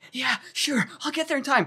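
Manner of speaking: mock breathless gasping. Retelling one of two recorded dialogue sets: imitating winded game dialogue.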